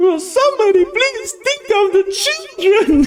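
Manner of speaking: very high-pitched mock shriek from the background.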